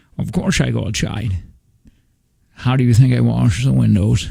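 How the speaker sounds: fake Scottish accent, stuffy-nosed. Answering a request for a layered impression: Sean Connery impression with a cold. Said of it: "doing an impression of Harrison Ford doing an impression of Sean Connery".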